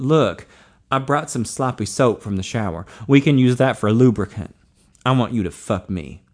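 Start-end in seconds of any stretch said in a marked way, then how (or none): none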